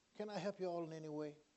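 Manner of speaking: said very quietly. Retelling what a 16-year-old young man said on coming over: said real quietly. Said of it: "he said real quietly, low keyed".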